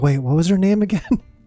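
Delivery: imitated whisper. Retelling what was whispered to companions during a long hangout: imitating a whisper. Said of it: "whispering to Joshua and Jill".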